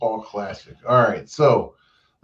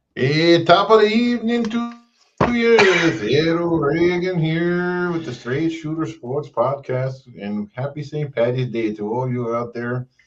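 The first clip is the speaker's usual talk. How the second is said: put-on Irish accent that sounds Canadian; 4 semitones higher than usual. Podcast host opening the St. Patrick's Day episode: Canadian-sounding put-on accent. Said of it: "why you sound Canadian".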